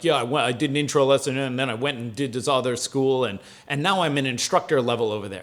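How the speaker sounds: cocky, arrogant and boastful, self-important. Retelling what a newcomer said on arrival: imitating someone speaking arrogantly. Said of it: "he said it kind of arrogantly".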